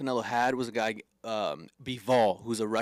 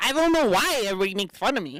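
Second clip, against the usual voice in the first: put-on high, raised little-kid voice, pitched up; 8 semitones higher, 6 dB louder than usual. Show the others how the boxer sounds when he talks, imitating Rolly's little-kid voice. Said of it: "he talks like this".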